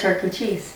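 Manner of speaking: put-on soft murmur. Retelling a random remark to an ex, imitating saying it really softly. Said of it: "But I said it really softly".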